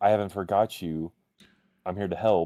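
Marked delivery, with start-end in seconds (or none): none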